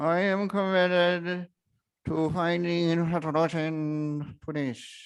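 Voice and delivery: through gritted teeth. Showing how he sometimes tells Paige he's committed to resolution: through clenched teeth. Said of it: "sometimes I am saying that through teeth like this".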